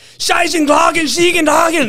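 very high, furious yell in German-sounding gibberish. Retelling a travel companion's phone call: imitating Vole Nijvelt's angry-sounding German. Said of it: "they sound angry".

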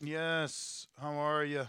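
tired, worn-out, weary sound. On a call, answering whether they can be heard, sounding tired. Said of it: "you sound tired".

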